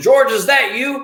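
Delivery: mock big call-out voice, pitched way up. Retelling a man calling to the speaker in a bathroom: big voice. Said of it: "I hear this big voice from somebody saying".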